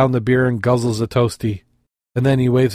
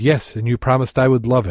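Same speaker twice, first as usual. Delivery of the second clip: ordinary talk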